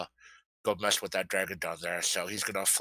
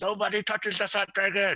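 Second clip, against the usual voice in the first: very high, loud, shouted battle yell; 12 semitones higher, 5 dB louder than usual. A player has their character yell out while aiming a shot: in-character yell. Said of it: "I'm gonna yell out".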